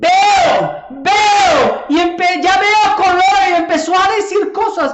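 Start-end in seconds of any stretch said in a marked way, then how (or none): 0.0-3.2 very slow, raised, drawn-out, called-out shout. Retelling how a man began shouting after being prayed for; retelling a man's shout. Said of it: "empezó el Señor a gritar".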